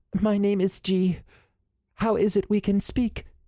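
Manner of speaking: very high, wavering, warbled voice. Narrator reading the female humanoid's introduction, warbled high-pitched G voice. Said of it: "in a warbled, high-pitched voice".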